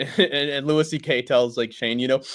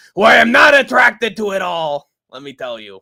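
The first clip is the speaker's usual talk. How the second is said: put-on sleazy show host voice, higher and louder; 8 semitones higher, 9 dB louder than usual. Retelling a scene from It's Always Sunny, imitating Frank. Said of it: "Frank's Little Beauties ... he's just like".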